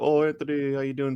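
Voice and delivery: put-on cheery, funny voice. Retelling a coworker's phone greeting: imitating a jovial, funny greeting. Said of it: "kinda like a jovial, funny way".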